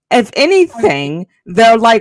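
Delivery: ordinary talk, nothing marked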